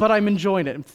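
put-on heavy German accent, laid on thick. Quoting a Holocaust survivor from the Bible studies, thick German accent. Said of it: "Thick German accent".

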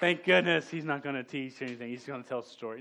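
ordinary delivery

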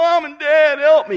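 play-acted, very loud, wailing crying whine. Imitating a listener pleading to the pastor for help: mock crying plea. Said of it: "You're full of crying noise".

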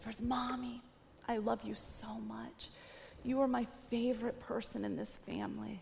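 barely audible, very quiet hushed half-whisper. Retelling what a three-year-old said at bedtime: imitating a half-whisper. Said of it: "she whispers".

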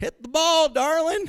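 loud, high-pitched southern drawl, hollered. Speaker recalling a woman calling out at their baseball games: southern drawl. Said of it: "distinctive voice with a southern drawl".

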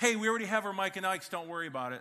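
put-on very loud, high, carrying child's blurt. Retelling what a six-year-old son blurted at the counter: imitating a child's loud voice. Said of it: "The loud voice, he goes".

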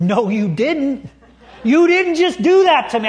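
mock outraged, high, indignant angry tone. Telling a story, the speaker acts out a teacher's reaction to a woman leaving, acting out angry indignation. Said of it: "I could tell he was visibly angry".

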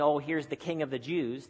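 ordinary delivery

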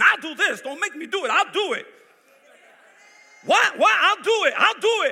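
very loud, shrill, high, threatening, bullying yell. Acting out someone at school intimidating another: imitating loud threats. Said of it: "Being real loud, threatening the other person".

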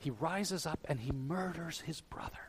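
soft, hushed, unvoiced whisper.

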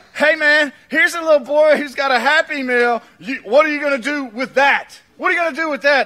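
loud, high-pitched, sarcastic and needling. Speaker acts out Andrew telling Jesus about a little boy's meal, mock-sarcastic as Andrew. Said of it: "Andrew's being sarcastic with Jesus".

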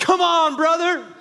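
very high, loud, exultant shout full of praise. Retelling cheering at a podcast sermon while driving alone: retelling own past shouting. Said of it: "I'm just shouting hallelujah".

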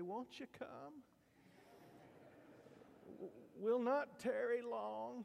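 put-on high, drawn-out, creaky, whiny old-time preacher voice. Recalling how an older preacher would call people forward, imitating a whiny preacher. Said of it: "kind of get in a whiny voice".

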